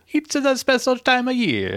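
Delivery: put-on Italian accent. Mimicking the other speaker's announcement: imitating an Italian accent. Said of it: "Did you turn Italian?".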